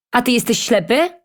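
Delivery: indignant, outraged tone. A baker, blocked on a narrow path by a painter, retorts indignantly. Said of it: "oburzył się piekarz".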